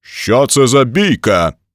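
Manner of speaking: thunderous, thundering, slow, booming, bellowed shout. He breaks up a brawl among a heap of fighters, thundering. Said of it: "Гримнув він".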